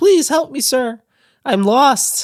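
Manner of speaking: put-on very high, slow, small, lost-sounding little girl voice. Voicing a lost little girl asking for help: lost little girl voice. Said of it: "a little girl in a dress".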